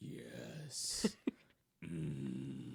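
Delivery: mock sensual heavy breathing. Recalling a voice-acting session, redoing the lines, imitating sensual heavy breathing. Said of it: "and be sensual with it".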